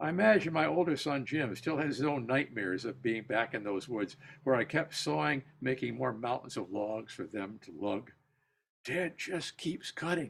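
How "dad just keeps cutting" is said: frantic, pleading, high, desperate whisper. Reading aloud a son's words to his brother: imitating a desperate whisper. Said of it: "Jim would whisper in a desperate voice".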